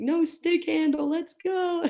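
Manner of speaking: very high, carrying shout. Speaker recounts calling out to players in drills, retelling a yell down the ice. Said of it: "I'm like yelling down the ice".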